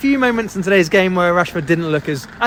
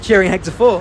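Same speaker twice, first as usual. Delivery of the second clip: ordinary delivery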